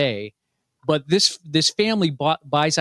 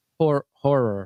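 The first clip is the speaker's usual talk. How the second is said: Pittsburgh accent on the word "horror"; 2 semitones lower than usual. Saying which movie genre is liked, Pittsburgh accent on horror. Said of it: "That Pittsburgh accent turns it into horror".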